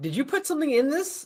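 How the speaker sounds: very high, bewildered, confused, disbelieving voice. Playing a character asking a partygoer about a drink: confused.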